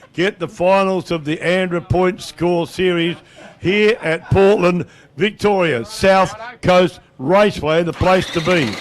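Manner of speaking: slow, soft, deliberate, each word drawn out. Repeating a request to listeners about the finals coming here, said slowly. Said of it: "I'll say it slow".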